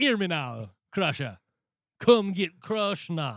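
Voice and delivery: put-on Jamaican accent. Showing the voice first wanted for a character: put-on jamaican accent. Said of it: "I wanted to do a Jamaican voice".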